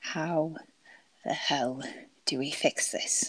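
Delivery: soft words forced, ground out through clenched teeth. A character glares at him, dagger still not pulled back: through gritted teeth. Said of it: "grounds out through gritted teeth".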